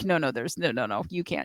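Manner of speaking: put-on authoritative voice. Imitating the other speaker's way of saying it, mock-authoritative. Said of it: "You just you sound very authoritative".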